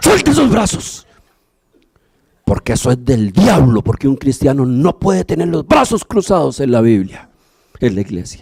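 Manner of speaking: put-on ghostly, otherworldly voice. Recalling a woman who approached during prayer, retelling a ghostly voice. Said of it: "con una voz así como de ultratumba".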